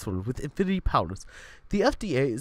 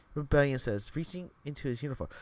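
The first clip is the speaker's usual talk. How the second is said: ordinary talk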